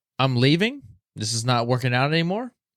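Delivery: ordinary delivery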